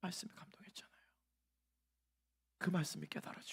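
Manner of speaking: dramatic, soft, hushed whisper.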